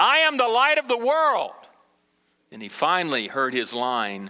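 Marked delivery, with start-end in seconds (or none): 0.0-1.5 acted-out exasperated, fed-up, loud, very high-pitched shout. Retelling how a mother finally prompted her son, imitating an exasperated loud call. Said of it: "each time she got louder and louder until finally she just, in exasperation, said".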